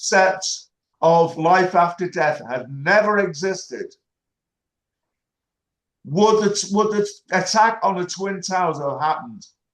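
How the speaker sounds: slow, deliberate, carefully spaced, measured words. Sick of repeating himself, putting a question to the others, slow, deliberate speech. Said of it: "I'm going to try and say it slowly so you can hear".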